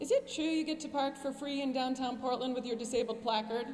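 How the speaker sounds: ordinary delivery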